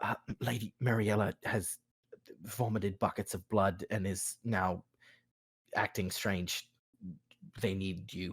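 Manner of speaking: hushed whisper, very quiet, barely audible. Voicing a messenger who comes over with urgent news: whispering. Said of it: "comes over and whispers to you".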